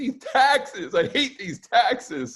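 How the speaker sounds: put-on very high, drawn-out, wailing, sobbing crying-kid whine. Retelling a viral video of a kid playing Monopoly: imitating a crying kid. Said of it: "he just starts crying".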